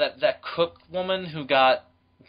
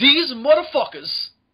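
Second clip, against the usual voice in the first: put-on very high, loud, furious New York accent; 10 semitones higher, 5 dB louder than usual. Showing own angry outbursts: imitating an angry New York accent. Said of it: "me with the New York accent. Whenever I get angry".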